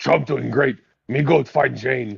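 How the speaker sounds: put-on caveman voice. Mocking how a listener's message reads, in a Tarzan voice. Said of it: "Why do they all talk like Tarzan?".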